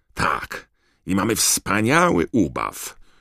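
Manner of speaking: choked, strangled, pressed-in, squeezed voice. Reading a novel, the narrator gives one of the boys' lines: strangled, squeezed voice. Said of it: "powiedział George zduszonym głosem".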